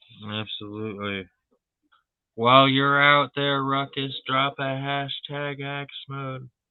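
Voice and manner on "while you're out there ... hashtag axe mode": distant echoing voice, like far tunnel end, higher. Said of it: "Why do you have to say that like you were, like, at a far end of the".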